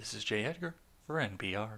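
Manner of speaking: soft, deep, low, gentle radio announcer voice. Mid-review of an opinion piece, the speaker drops in a sign-off: NPR announcer sign-off voice. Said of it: "that gets annoying even to me".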